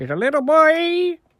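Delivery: squeaky put-on voice.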